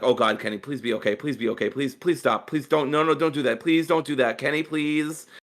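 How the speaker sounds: put-on cringing, anxious, pleading tone. Retelling own reactions while watching a match: retelling own cringing plea. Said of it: "this whole match was me cringing on the inside".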